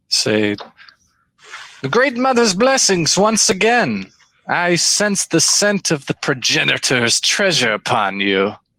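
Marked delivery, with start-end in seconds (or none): 1.8-8.5 small lizard-creature voice, stately, grand and elegant. Game master voices a kobold leader greeting the players, grand. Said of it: "Kobolds are lizard humanoids that are very small in stature, but this one has sort of like this elegant, grand presence to him, and he controls these magnificent, dressed and hulking followers that ar".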